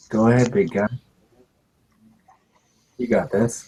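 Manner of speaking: quiet whisper under the breath, low tone. A character encourages the big guy, in a low whisper. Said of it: "He says uh whisp uh, in a low tone".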